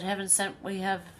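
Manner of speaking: plain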